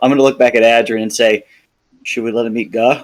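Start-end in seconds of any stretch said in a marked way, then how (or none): 2.0-3.0 quiet, hushed voice. Asking Adrian in character so the others don't hear: said quietly. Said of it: "I said that quietly so they didn't hear me".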